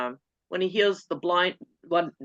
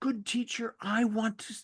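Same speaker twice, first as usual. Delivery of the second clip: mock plaintive pleading, higher and quieter; 4 semitones higher, 7 dB quieter than usual. Retelling a beggar's request to Jesus, acting out a plaintive plea. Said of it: "you can almost hear this plaintive".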